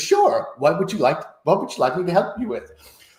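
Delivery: high, flirty American woman's voice. Retelling asking ChatGPT for help, speaker voices its reply in a flirty American lady voice. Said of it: "in the like flirty American lady voice".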